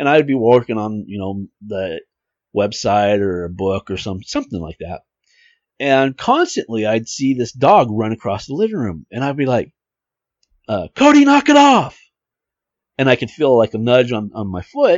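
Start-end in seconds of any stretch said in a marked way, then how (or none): 10.9-12.0 shrill, very loud, full-on scolding yell. Retelling telling a dog to stop running across the room: imitating himself yelling at a dog. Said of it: "why are you yelling at me?".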